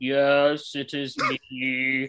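deep vampire voice. Retelling a phone call in which Christopher Lee answers, Christopher Lee impression. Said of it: "he talks exactly like Dracula".

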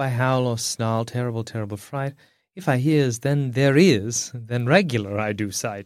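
quiet mumbling mutter under breath. In a roleplay scene facing wolves, a character mutters: muttering under breath. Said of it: "I mutter under my breath".

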